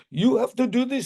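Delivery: put-on very high pitch, heavy Indian accent. Quoting what the speaker's teacher said about the school study, in a thick Indian accent. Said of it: "She had a very thick uh, Indian accent".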